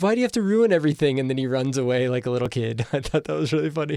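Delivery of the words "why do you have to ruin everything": high, loud mock whiny complaining. Recapping a show scene, quoting Sam Richardson's line, imitating him whining. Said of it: "says in a whiny voice".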